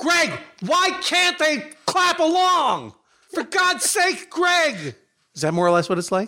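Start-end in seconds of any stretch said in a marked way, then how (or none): 0.0-4.9 very high, heated, drawn-out yell. Imitating Eric yelling at Greg in band practice: imitating Eric yelling in band practice. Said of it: "let me do my imitation of you in band practice".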